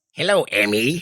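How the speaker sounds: put-on gruff monster voice. On a group show intro, greeting someone by name: Venom voice. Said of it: "That's my Venom".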